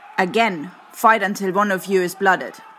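very high, sharp, loud bellowed voice. Narrator reads a woman's command to the fighters in the cage: bellowed command. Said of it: "bellowed a fresh command".

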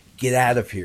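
ordinary talk

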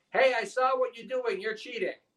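put-on high-pitched yell in a clever kid voice.

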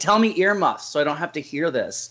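put-on, belittling, half-hearted mild yell. Retelling how a friend used to scream at Danny: imitating someone screaming. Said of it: "you would scream because you actually had to hear it".

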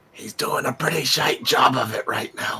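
soft, unvoiced whisper.

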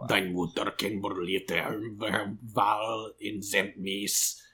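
soft, half-whispered under the breath. Voicing a character who insults a bugbear: half-whispering in character. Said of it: "he'll just whisper to him".

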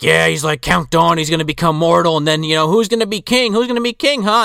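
mock yelling.

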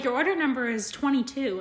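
usual speaking voice

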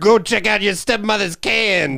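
put-on old man voice, very high. Mocking another speaker's impression by doing an old man voice.

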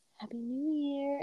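quiet, slow whisper.

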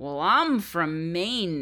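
put-on botched mix of New England and Southern accents. Retelling a man's reply to a question, in a bad New England-Southern accent. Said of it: "in his like bastardized New England / Southern accent".

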